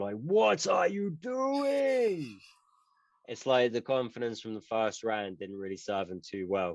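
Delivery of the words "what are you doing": high-pitched, slow screaming. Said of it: "James Krause is just screaming".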